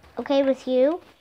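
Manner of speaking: usual speaking voice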